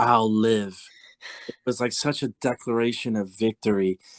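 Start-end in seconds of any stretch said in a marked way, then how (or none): 0.0-0.8 deep put-on actress voice. Retelling a close-up where she answers a question, in a deep Cate Blanchett voice. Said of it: "in her deep Cape Blanchett voice".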